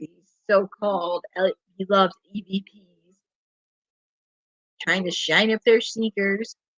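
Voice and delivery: snide, scoffing, sarcastic, mocking tone. Commenting on a wrestling match while watching it, sarcastic. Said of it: "and I'm being sarcastic".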